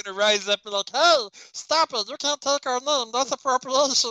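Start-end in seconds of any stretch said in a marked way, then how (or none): 0.9-4.1 high, squeaky little chipmunk voice. Voicing groundhogs protesting a team taking their name: chipmunk-like voice. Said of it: "That's a chipmunk, [name]".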